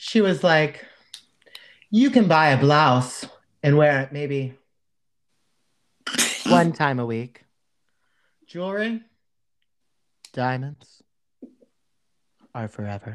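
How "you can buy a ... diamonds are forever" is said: painfully slow, deliberate, drawn-out speech. Imitating a woman who took the note to slow down too literally, very slow. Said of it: "Why did she talk so slow?".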